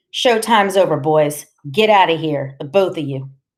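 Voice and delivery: plain reading voice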